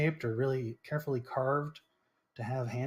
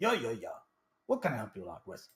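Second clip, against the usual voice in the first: clumsy, bad Russian accent, swooping; 3 semitones lower than usual. Voicing the dwarf character for the group, bad Russian accent. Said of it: "kind of has a Russian voice. I'm bad at Russian voice".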